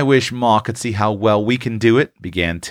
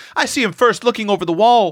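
very high-pitched, roaring exclamation; 11 semitones higher than usual. A boy, eager for his share of honor, joins in telling the story; roaring. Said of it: "roared Seth".

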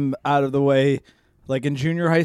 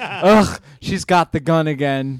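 usual speaking voice

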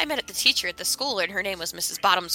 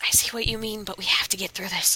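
conspiratorial stage whisper, leaning in, aside. Playing her character, she leans over to a companion: whispering. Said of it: "kind of whisper to Legolas".

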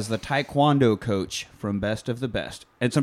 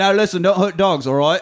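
put-on pitched-up English accent, slightly loud; 5 semitones higher, 5 dB louder than usual. Joking that the robot is a British comedian: Ricky Gervais impression. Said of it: "Ricky Gervais, the British comedian".

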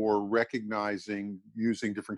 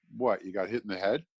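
acted, casual, offhand, half-joking snarky tone. Retelling an offhand question once put to a group: offhand snarky quip. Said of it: "kind of kidding, offhanded, somewhat snarky way".

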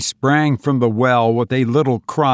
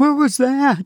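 sharp, breathless cry, very high-pitched; 14 semitones higher than usual. Narrator reads a woman springing to her feet beside Benson: crying out breathlessly. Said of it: "she cried breathlessly".

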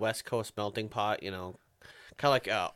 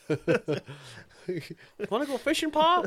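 bad put-on Southern accent, very high and swooping; 13 semitones higher, 5 dB louder than usual. Joking about an old sitcom, the speaker does a bad Andy Griffith Show accent. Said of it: "A bad accent".

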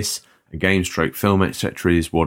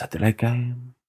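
put-on Japanese accent, pitched up; 6 semitones higher, 5 dB quieter than usual. Imagining the monk saying the line, in a mock Japanese accent. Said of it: "saying it in Japanese voice".

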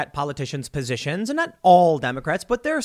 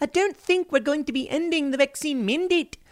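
put-on very high-pitched, poorly done New Zealand accent; 10 semitones higher than usual. Quote the New Zealand prime minister in an attempted New Zealand accent. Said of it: "I can't really do a New Zealand accent".

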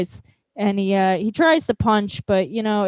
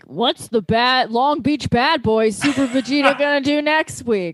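next-episode TV teaser announcer voice; 3 semitones higher than usual. Retelling an episode's ending, imitating the show's announcer. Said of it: "the announcer comes on. He's like".

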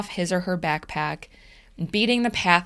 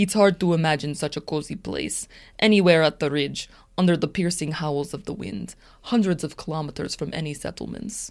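put-on Russian accent, narrated as if read aloud. Reading aloud what he writes, urged by the other speaker, channeling Svetlana in a Russian accent. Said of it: "that was an amazing accent".

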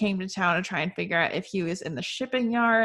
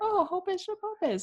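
put-on very high, squeaky baby-talk voice; 12 semitones higher than usual. Showing how the speaker talks to their dog: baby talk voice. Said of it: "I will talk to my dog that way".

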